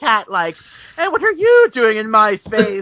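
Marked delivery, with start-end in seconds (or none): 1.0-2.8 evil mastermind villain voice. Retelling how the pilot acts, stroking his cat: Bond villain voice. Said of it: "now he's like a Bond villain".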